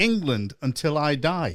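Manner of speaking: usual speaking voice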